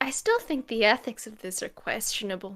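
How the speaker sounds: quiet mutter under the breath. Voicing a character who comments to no one in particular: muttering under breath. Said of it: "I just kind of mutter".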